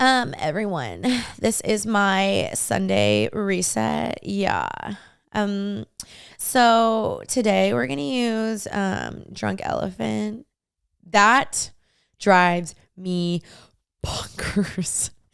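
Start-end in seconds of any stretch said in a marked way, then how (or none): 0.0-10.5 very slow drawl in creaky vocal fry. Mocking how people talk on TikTok, in vocal fry. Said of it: "The vocal fry. ... It's when girls talk like this".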